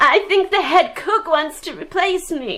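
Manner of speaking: high, tearful, weeping through the words. Therese, working late, confiding in her companion, crying. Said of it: "don't cry".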